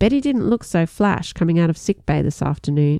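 ordinary delivery

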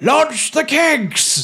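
very high, shrill, loud, bellowed shout. Voicing a lord above the players ordering the kegs launched: Lord Prentice Humphrey Turkeycock shouting. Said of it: "Lord Prentice Humphrey Turkeycock's voice saying".

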